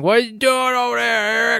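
high-pitched yelling. Describing a scene at work, acting out the boss yelling at eric. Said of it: "boss starts yelling".

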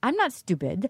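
put-on Russian accent. Retelling what a russian contestant said: put-on russian accent. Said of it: "Here comes my Russian accent".

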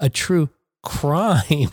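wry, ironic tone, as if in scare quotes. Testing if air quotes are audible without gesture: ironic air-quote tone. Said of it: "see if you can still hear it".

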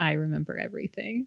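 hushed, quiet half-whisper. Retelling a scene where a character leans in and half-whispers: imitating a half-whisper. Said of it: "leans in and whispers in her ear".

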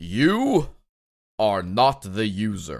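proclaiming, godlike voice. Announcing the very first commandment, the speaker breaks out God voice. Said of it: "I'm breaking out God voice for this".

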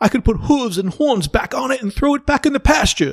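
terrible fake British accent, very high-pitched. Discussing the show, quoting what Gordon says: terrible Gordon accent impression. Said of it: "that's a terrible accent I just did".

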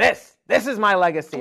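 put-on curmudgeon voice. Retelling how he always used to say it, curmudgeon-y imitation of him. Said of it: "He would say it in a really curmudgeon-y way".

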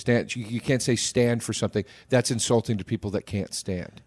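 normal talking voice

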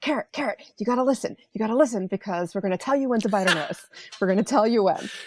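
acted-out whisper. Speaker acts out her whispering through the door to Carrot; retelling a whisper through a door. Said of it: "What are you whispering?".

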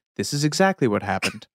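documentary-style voiceover narrator delivery. Retelling a stunt story, switching into the narrator voice. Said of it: "you get the narrator voice".

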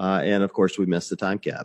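normal talking voice

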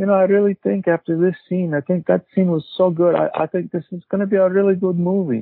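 easygoing, calm, even low-key tone. Retelling what Vilmos Zsigmond said as they walked out after a scene, soft voice. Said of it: "he had this kind of soft voice like this".

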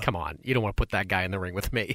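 dismissive, scoffing, acted-out sneer. Retelling how a boxer reacts when asked about today's greats: imitating Hagler sneering. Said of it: "he sort of just sort of sneers".

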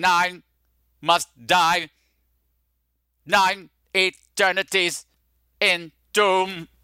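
reconstructed, electronic voice box voice. Imitating a burned movie character who speaks through a neck speaker: voice-box speech. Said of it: "he talks like this".

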